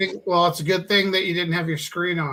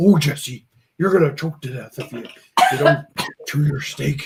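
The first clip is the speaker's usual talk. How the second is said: fatherly dad voice; 2 semitones lower, 3 dB louder than usual. Retelling what her dad always says: impersonating her dad. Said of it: "doing this impersonation of her dad".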